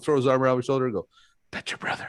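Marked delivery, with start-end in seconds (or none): 1.5-2.1 hushed, breathy whisper. Retelling how a wrestling partner pointed at a fan: imitating a whisper. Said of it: "And it was always just a whisper".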